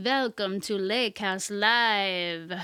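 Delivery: vampire voice with Live drawn out. Podcast host opening the Halloween episode in a vampire voice. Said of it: "that was my alter ego vampire voice".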